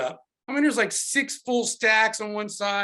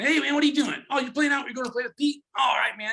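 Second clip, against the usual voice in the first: nasal impression, higher pitch; 4 semitones higher than usual. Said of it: "talks through his nose a little bit".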